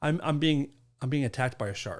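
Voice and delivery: ordinary talk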